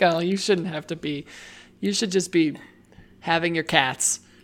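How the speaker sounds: ordinary talk, nothing marked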